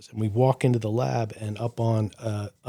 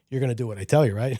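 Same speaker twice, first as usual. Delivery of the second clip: put-on insistent Italian dad voice. Retelling a father's words that weren't a question: imitating an insistent Italian father. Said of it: "like an Italian father saying".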